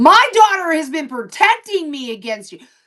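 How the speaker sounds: high-pitched, furious, out-of-control scream. A mother retells screaming at a girl who talked about her daughter: retelling her own screaming.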